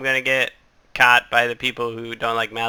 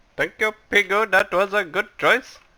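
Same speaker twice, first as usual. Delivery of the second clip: bad Arabic accent drifting Indian, pitched up; 9 semitones higher than usual. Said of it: "That's more Indian".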